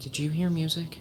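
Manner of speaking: in a whisper. Waking another character after hearing music, asking: whispering. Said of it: "in a whisper ask".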